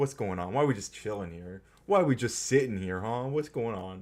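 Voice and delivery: cranky, put-out, grumpy pet creature voice. Voicing a yawning pet who seems grumpy: voicing grumpy Umbreon. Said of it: "He's a little grumpy. He's like".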